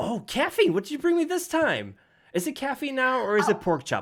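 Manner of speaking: slightly squeaky weaselly snake voice. Voicing a fuzzy weasel snake greeting a customer: somewhat squeaky Big Little Tim voice. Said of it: "kinda squeaky, but not as squeaky".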